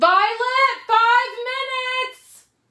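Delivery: very loud, shrill, high-pitched yell. Breaking off to call to someone right outside her office door, yelling. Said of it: "Sorry to yell in your guys' ear".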